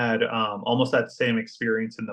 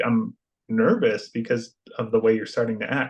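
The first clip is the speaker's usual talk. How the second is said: ordinary delivery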